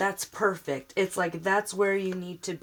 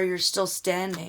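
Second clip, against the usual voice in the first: normal talking voice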